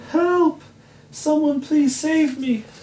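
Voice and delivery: shrill piercing scream, very high, at full volume. Princess Nisma, pulled into a cave in a sack, screaming. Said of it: "screamed Princess Nisma".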